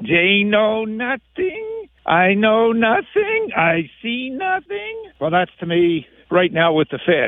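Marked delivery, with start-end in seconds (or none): 0.0-5.1 drawn out slowly with pitch swinging up and down. A host speaking to Josh about the Fed does a Sergeant Schultz impersonation. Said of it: "Sergeant Schultz impersonation".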